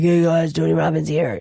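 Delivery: put-on hoarse, raspy voice. Describing how Tony Robbins sounds, doing a Tony Robbins voice. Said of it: "his voice be like".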